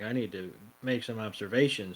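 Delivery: low mutter, half to himself, under the breath. Retelling what Tracy says while focused on his sketch: muttering under his breath as Tracy. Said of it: "he's kind of under his breath".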